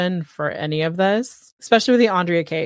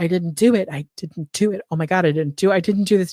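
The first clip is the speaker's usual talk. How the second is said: play-acted voice beginning to weep. Retelling a scene where Dennis talks to himself, imitating him starting to cry. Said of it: "he's like starting to cry".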